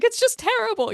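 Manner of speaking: put-on sobbing old-hollywood actress. Recapping a scene where a character sobs, in a Katharine Hepburn voice. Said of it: "in her sort of Katharine Hepburn kind of voice".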